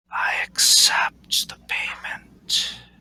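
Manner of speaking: dry, hushed whisper with a rattle. Narrating the scene, the storyteller voices an unseen thing speaking: rattling whisper. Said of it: "you hear this kind of rattling whisper say".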